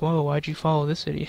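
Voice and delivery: taken-aback, astonished, surprised tone. Thanking a new follower, acting out their surprise: imitating surprised Will Smith. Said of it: "Will Smith is so surprised".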